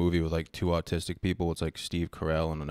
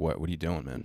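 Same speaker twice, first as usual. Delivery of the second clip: normal talking voice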